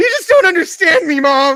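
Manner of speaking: petulant, shrill, very loud, very high bratty scream. Showing how a teenager sounds: imitating a screaming teenager. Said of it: "like a screaming teenager".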